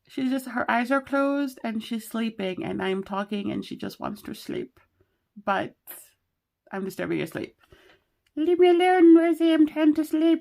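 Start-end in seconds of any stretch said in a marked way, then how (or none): 8.4-10.4 very high, squeaky, loud, sleepy little owl voice. Voicing a sleepy owl sticker that is being disturbed: sleepy owl voice. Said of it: "why am I using that voice".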